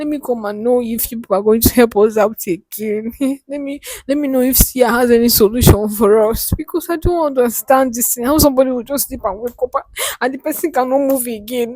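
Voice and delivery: weeping, sobbing, crying through the words. Speaker begs others for help for a person who cannot move, crying. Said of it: "Stop stop crying".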